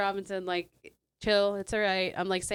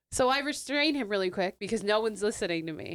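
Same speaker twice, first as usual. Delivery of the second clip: ordinary delivery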